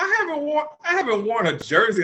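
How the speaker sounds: voice cracking, swooping and rising in pitch. Explaining they haven't worn a jersey out in years: voice cracking, getting higher. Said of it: "voice cracking though? Why is your voice getting higher?".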